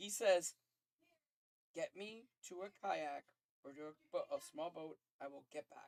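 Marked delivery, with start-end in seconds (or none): 1.7-5.9 soft, low, hushed half-whisper. Voicing a character asking to be taken to a boat: half-whispering. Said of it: "he's just whispering it".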